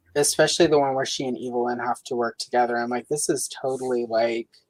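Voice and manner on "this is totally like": usual speaking voice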